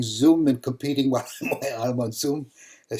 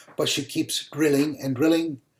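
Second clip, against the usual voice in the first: ordinary talk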